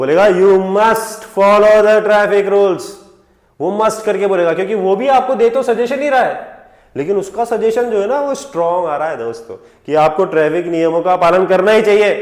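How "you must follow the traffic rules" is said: loud, slow, stern traffic cop voice. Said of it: "यही बात अगर आपको ट्रैफिक पुलिस वाला बोलेगा".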